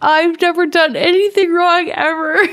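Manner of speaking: tearful sobbing voice. Imagining being caught, the speaker acts out crying: mock crying. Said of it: "I would be crying and saying".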